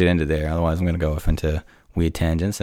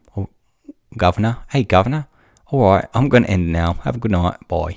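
put-on English accent, pitched up; 3 semitones higher, 3 dB louder than usual. Signing off the show to listeners, finishing with an English accent. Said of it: "I thought I'd finish it with an English accent".

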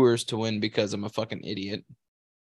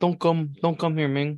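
put-on Tagalog-accented speech; 3 semitones higher than usual. Voicing the statue warning people off: Tagalog accent. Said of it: "Tagalog accent".

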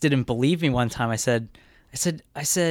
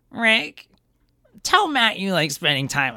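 put-on valley girl voice. Speaker retelling what a woman said to rick at dinner; valley girl voice. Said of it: "She was like a valley girl".

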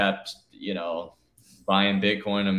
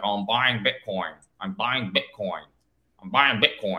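imitated, mocking nasal voice. Imitating a newcomer during a buying spree, imitating a nasal voice. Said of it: "he comes in with his nasally voice".

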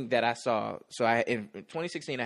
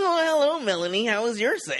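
mock annoying voice, higher, louder; 12 semitones higher, 7 dB louder than usual. Joking about future office life, imitating an annoying coworker. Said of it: "till you get some annoying coworkers".

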